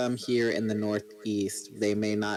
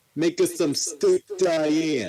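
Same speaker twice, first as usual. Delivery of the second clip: loud, high put-on Brooklyn accent on every word; 7 semitones higher, 7 dB louder than usual. Asked if that's the Brooklyn accent, carrying on: Brooklyn accent. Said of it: "Apparently so".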